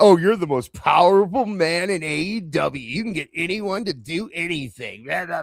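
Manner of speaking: play-acted, sneering, sarcastic, slow, snarky mocking tone. Retelling a remark on a played clip: snarky mocking tone. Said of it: "the snarky, like".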